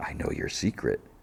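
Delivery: soft, low, hushed, murmured whisper. Retelling a show, one contestant walks over to another and whispers: whispered. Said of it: "He whispers".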